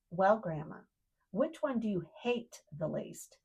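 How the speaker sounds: put-on stern teacherly voice. Retelling a granddaughter questioning her grandma, in a mock-stern teacher tone. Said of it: "with her very best stern teacher tone".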